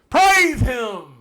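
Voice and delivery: screaming. Naming a number-five pick loudly to the group: screaming. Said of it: "Why did you scream it?".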